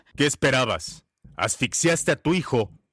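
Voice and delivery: coarse, very low man's voice. Retelling a man's answer about her son: imitating a very rough man. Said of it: "un hombre muy tosco me respondió".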